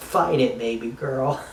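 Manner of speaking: ordinary talk, nothing marked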